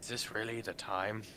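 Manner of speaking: barely-there, very quiet half-whisper under the breath. A player quietly asks another during an in-game conversation, subtle half-whisper. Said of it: "I'm gonna very subtly whisper".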